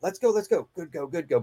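quiet, soft, low-volume speech. Speaker demonstrating a dog recall over a radio, speaking quietly into the mic. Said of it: "I'm talking kind of quietly into the mic".

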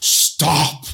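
high magical cry. Player character casting a spell to make a companion stop, in a bellowing shout. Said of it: "so my voice bellows".

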